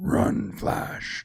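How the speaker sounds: whispered, epic villain voice. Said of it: "'cause in his voice".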